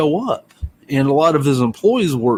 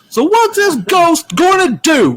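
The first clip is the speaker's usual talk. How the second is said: shrill, very high, furious scream; 4 dB louder than usual. Retelling how he screamed at the guy with the failing bar, retelling a furious scream. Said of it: "this guy's like screaming mad".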